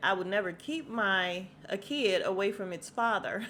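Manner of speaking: ordinary delivery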